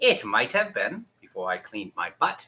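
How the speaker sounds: put-on cat character voice. Asked whether he washed his hands before handling food, answering in Cat Boss voice. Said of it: "I gotta do the cat boss voice".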